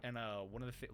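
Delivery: ordinary delivery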